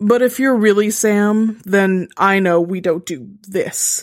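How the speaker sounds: plain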